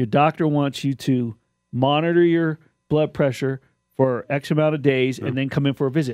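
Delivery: ordinary talk, nothing marked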